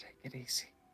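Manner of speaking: hushed whisper, very quiet, barely voiced. Whispering a warning to another character in the game: whispering in character. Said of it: "I'm gonna whisper".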